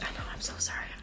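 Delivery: soft, unvoiced whisper. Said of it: "confessing she loves eggs".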